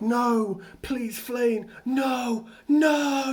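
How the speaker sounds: broken, shattered voice, high and slow. Recounting the game moment when Flane is killed: imitating Setef's broken voice. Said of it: "in the most broken, shattered voice".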